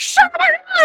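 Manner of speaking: very high, shrieked scream. Retelling a scene from a musical: imitating someone screaming. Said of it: "she screams right in his face".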